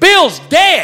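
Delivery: high, loud screaming.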